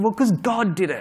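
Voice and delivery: high, slow, mocking put-on voice.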